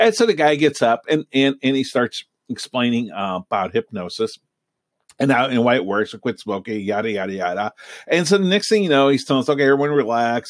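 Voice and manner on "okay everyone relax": ordinary talk, nothing marked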